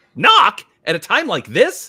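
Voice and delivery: very loud, drawn-out, swooping exclamation. Narrator reads a story character's retort, exclaiming. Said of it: "Exclaimed Aurora Rose".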